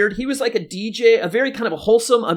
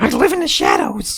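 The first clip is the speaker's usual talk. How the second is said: high-pitched, acted cartoon superhero voice; 6 semitones higher than usual. Answering what Marge Batman sounded like, in a Marge Batman voice. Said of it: "she would go like".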